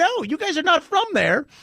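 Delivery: put-on heated yelling, pitched high. Retelling a man from Mexico yelling at his friends: imitating someone yelling. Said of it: "he was yelling at them".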